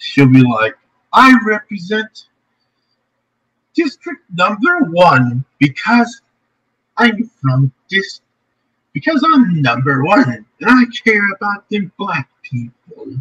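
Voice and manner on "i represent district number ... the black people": bad put-on voice, high, swooping and sing-song. Joking about a representative forgetting her district, in a bad Maxine Waters impression. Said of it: "my bad impression of Maxine Waters".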